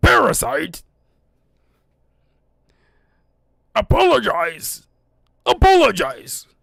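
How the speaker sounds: loud, rasping, rough, harsh monster voice. Quoting a line after saying how much they love the Venom voice:. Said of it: "I love that Venom voice".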